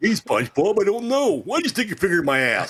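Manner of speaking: very high, squeaky, swooping cartoon voice. Saying he can't do the character, then trying a SpongeBob's Patrick voice. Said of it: "I can't do SpongeBob Patrick. That'd be like".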